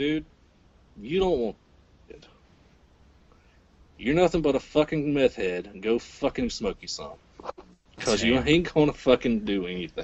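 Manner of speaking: ordinary talk, nothing marked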